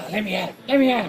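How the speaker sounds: terrible, high-pitched cartoon puppy voice. Talking over a mystery with the group, breaking into terrible Scrappy-Doo impression. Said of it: "That was my terrible Scrappy-Doo impression".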